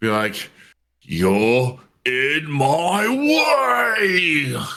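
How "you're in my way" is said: furious, very slow, deliberate, way drawn out. A player voices his raging character before he casts a spell, real angry. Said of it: "Just real angry".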